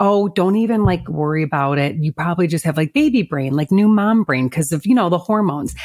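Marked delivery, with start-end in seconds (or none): none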